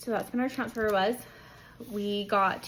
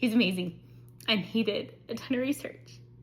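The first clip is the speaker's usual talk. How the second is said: tearful voice, nearly crying. Speaker praises their husband for his research, about to cry. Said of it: "I might cry".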